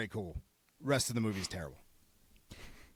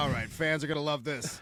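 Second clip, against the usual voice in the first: ordinary delivery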